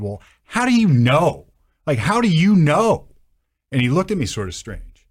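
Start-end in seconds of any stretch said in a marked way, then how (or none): 0.0-3.1 slow, high-pitched screaming. Retelling questioning a man about how a fire started: retelling own screaming. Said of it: "I probably screamed it louder".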